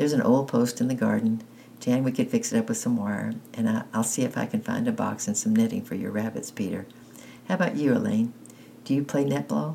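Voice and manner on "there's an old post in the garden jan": ordinary delivery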